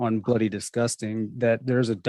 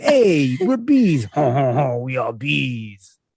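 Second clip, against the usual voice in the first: put-on French accent, bee voice; 2 semitones higher, 3 dB louder than usual. Friends joke about French bees, in a mock French accent. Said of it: "Fucking French bees".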